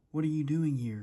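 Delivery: gruff, rough giant voice. Narrator reading a story, the giant finds kids in his garden; gruff giant voice. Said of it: "he cried in a gruff voice".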